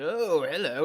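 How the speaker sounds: casual, unbothered, laid-back character voice. Retelling how the Sorting Hat greets Harry, chilling: Sorting Hat voice. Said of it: "He's just like".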